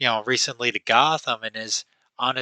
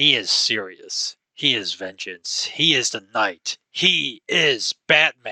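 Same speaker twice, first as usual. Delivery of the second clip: deadly serious superhero voice, badly done. Describing how Batman is portrayed: horrendous Kevin Conroy Batman impersonation. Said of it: "apologies for that probably horrendous, horrendous Kevin Conroy impersonation".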